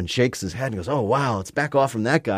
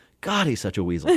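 usual speaking voice

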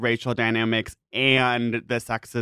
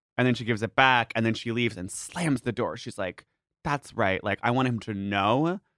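ordinary talk, nothing marked

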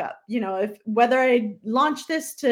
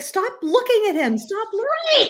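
shrill, very high-pitched screaming; 10 semitones higher than usual. Retelling yelling at a swimmer on tv during a race, retelling screaming at the tv. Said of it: "I was screaming at the television".

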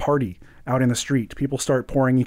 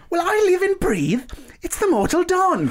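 very high, sharp, ringing, piercing voice. Over the noise of a party, a voice calls out: sharp, ringing voice. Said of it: "kind of a sharp voice that it just kind of rings out".

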